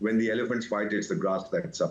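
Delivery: plain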